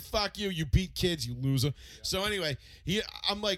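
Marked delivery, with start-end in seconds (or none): none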